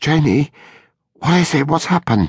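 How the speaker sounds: hoarse, frightened cry, pitched very high. Kneeling beside a woman lying on the floor, he speaks in a hoarse, frightened voice. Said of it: "saying in a hoarse, frightened voice".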